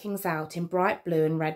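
plain

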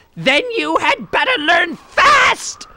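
very high, shrieking, screeching witch voice. The witch answers the narrator, who cannot spin a web, screeching witch voice. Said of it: "Screeched the witch".

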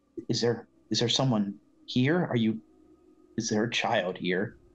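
whispered under the breath. Player's character stands by a chair at an altar, whispering to oneself. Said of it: "So I just whispered to myself".

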